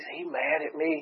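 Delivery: slow, hushed whisper, spoken as an aside. Retelling how Daryl leaned over and whispered a question to Ashley; retelling a whisper. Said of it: "he whispers to Ashley".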